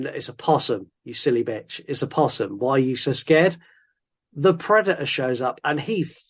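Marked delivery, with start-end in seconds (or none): none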